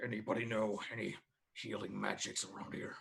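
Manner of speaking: quiet mumbling under breath. A player's character in a role-play game looking around, muttering under breath. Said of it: "say under my breath".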